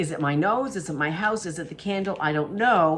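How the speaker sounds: plain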